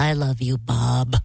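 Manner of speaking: low, slow dog voice. Introducing the daughter's dog, the speaker does Dave the dog's voice. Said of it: "Dave has a voice like this".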